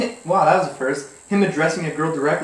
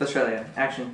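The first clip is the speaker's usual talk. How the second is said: ordinary talk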